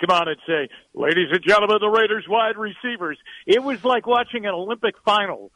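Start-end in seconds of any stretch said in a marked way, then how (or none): 0.9-3.2 booming put-on stadium PA announcer voice. Recalling Raiders pregame intros, the speaker mimics the announcer in a booming PA announcer voice. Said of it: "Big booming PA announcer voice".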